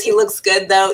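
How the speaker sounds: ordinary delivery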